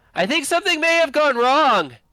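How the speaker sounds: shouting at full volume. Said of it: "she's shouting at the top of her lungs".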